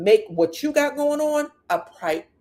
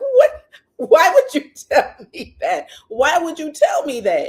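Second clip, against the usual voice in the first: put-on words bubbling through high, swooping giggles; 8 semitones higher, 6 dB louder than usual. Retelling how Matt reacted to an odd remark: imitating someone giggling.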